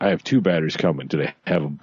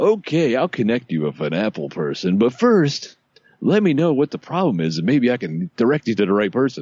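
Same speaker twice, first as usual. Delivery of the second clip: automated phone-menu robot voice; 4 semitones higher than usual. Retelling a call to an automated phone line: imitating a stupid robot voice. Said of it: "the same stupid robot voice".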